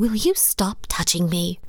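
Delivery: ordinary delivery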